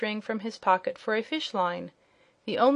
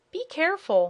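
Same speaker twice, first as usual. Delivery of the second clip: high, squealing little piglet voice; 7 semitones higher than usual. A piglet being petted warns the one holding it, with a squeal. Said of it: "said the piglet with a squeal".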